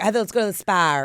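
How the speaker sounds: put-on Boston accent with a hard ah sound. Quoting her mom: imitating mom's Boston accent. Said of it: "She she does a hot ah".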